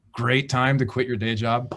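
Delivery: heavy, laid-on, dripping sarcasm. Remarking on quitting a day job months before the pandemic: heavy sarcasm. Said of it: "heavy sarcasm on there".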